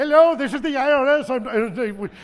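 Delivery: put-on high, very slow, drawn-out Calcutta Indian accent. Retelling a scam phone call claiming to be the IRS: imitating a caller's Indian accent. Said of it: "One was obviously from Calcutta".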